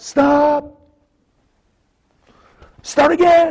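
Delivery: powerful, very high shout. Retelling how a professor stopped a student's reading, retelling a powerful yell. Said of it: "with a really powerful voice".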